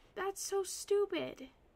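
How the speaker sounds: exasperated. Complaining that the work may be lost without saving: frustrated. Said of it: "I'm getting frustrated".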